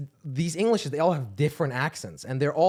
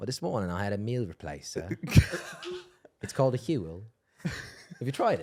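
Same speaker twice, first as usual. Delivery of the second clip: put-on British accent, low and soft; 6 semitones lower, 5 dB quieter than usual. Asked by the others to say what he had for breakfast, in a british accent. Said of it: "Tell us what you had for breakfast this morning".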